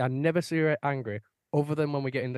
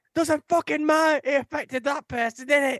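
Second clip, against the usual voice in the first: shrill, very high put-on screaming; 12 semitones higher, 4 dB louder than usual. Speaker retelling a woman raging over a driver who didn't indicate: imitating someone screaming. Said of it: "And she's like, just screaming".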